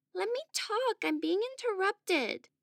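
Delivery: begging tone. A child interrupted by another child appeals to Papa Meme, begging. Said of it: "begged Adolfo".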